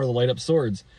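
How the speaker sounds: ordinary talk, nothing marked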